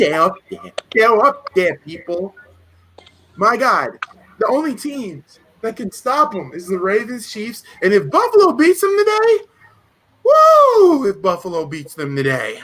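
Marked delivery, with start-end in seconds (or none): 0.0-11.1 heavily laid-on put-on New York street accent. Talking about a rival team, the speaker switches into a new york accent. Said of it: "Let me get my New York accent on".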